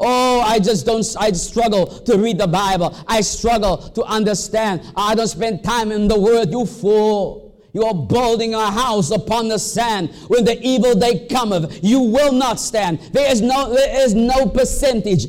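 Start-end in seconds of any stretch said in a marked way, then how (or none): none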